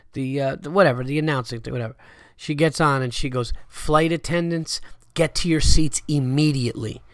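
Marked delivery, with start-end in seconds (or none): none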